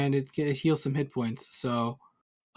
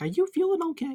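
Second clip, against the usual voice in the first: very high, squeaky little voice. Going to pick someone up who looks older, asking: squeaky high voice. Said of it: "into my squeaky high voice".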